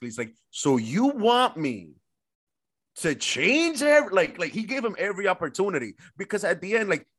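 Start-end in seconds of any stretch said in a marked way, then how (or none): 0.5-4.4 acted, heavy, drawn-out sarcastic sing-song. Recounting how one man came at another, imitating his sarcasm. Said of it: "he came at him mad sarcastically".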